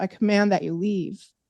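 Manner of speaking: ordinary talk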